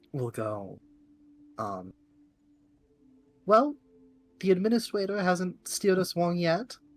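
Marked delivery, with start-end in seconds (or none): 3.4-6.7 high, raised, cutesy uwu voice. Speaker voicing the character Momo, Momo's uwu voice. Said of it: "She she speaks in an uwu voice".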